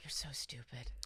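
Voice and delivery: breathy whisper under the breath, to oneself. Retelling crying in the bathroom: imitating a whisper to herself. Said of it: "I cry and just whisper to myself".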